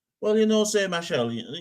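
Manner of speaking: bad Trinidadian accent, pitched very high. Putting on the voice of a caller phoning in, in a poor Trini accent. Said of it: "that was a very poor Trini accent there".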